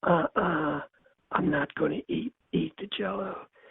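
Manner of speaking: gentle, soft-spoken, hushed voice. Retelling Hyman answering a woman who tells him to eat: Hyman's soft voice. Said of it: "And his soft voice".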